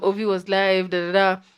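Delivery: normal talking voice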